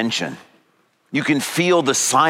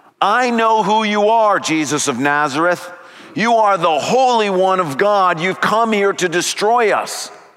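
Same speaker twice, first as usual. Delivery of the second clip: acted-out loud male shout, higher pitch; 5 semitones higher than usual. Telling of a man interrupting Jesus' teaching in the synagogue, retelling a man's shout. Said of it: "a man stands up and shouts out loud".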